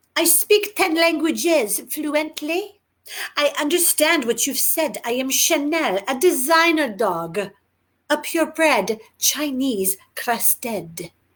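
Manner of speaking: put-on French accent. Narrator voicing Chanel, a dog who pipes up in English, French accent. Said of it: "in her French accent".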